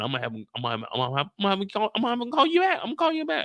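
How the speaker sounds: high, stuttering, stammering repetition, tripping over words. Playing a character on a call with Rocky: stuttering. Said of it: "I'm stuttering".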